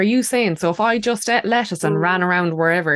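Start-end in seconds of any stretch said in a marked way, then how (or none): none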